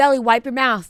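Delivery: mock, loud yelling. Recounting watching a show with a friend, retelling yelling at the screen. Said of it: "and I'm yelling at the screen".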